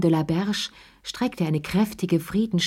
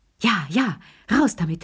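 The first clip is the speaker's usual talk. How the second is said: panting, gasping out the words; 2 semitones higher than usual. Three old people press a woman hiding a secret, gasping. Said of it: "japsten die drei Alten".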